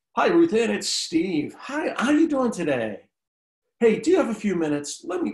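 high, sing-song sales pitch voice. Showing how a typical cold call sounds when a prospect picks up, salesy cold-caller voice. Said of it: "It has that salesy sound".

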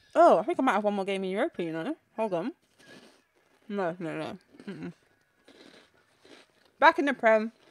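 talking while chewing, mouth full. Commenting on a game to listeners, the speaker talks while chewing. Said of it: "I'm bed chewing".

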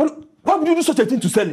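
shrill, very high-pitched shouting. On the phone, confronting a man about what he did to a woman, shouting. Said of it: "why are you shouting?".

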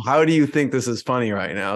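normal talking voice

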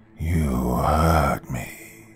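low, slow voice, each word stretched unnaturally long. Reading a story aloud, voicing Johnny's line in a low, drawn-out voice. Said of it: "Johnny's voice was low, stretching out each word unnaturally long".

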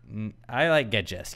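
ordinary delivery

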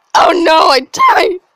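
loud shout, voice breaking mid-yell. Reacting to dying in a game, voice cracking. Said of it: "Voice crack number two".

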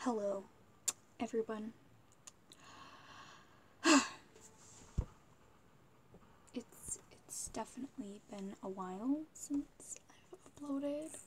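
whispered, barely voiced, hushed. Vlogger greets viewers while parents watch tv in the next room, whispering. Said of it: "I am seriously whispering".

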